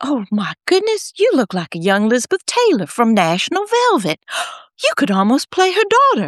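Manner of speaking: put-on swooping Southern accent. Speaker retells their mother's words to them as a small child: Southern accent. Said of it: "in her Southern accent".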